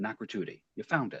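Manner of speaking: soft, quiet, hushed whisper. Walking past a man pretending to read at his desk, a whisper. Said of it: "I just like sort of whisper to him".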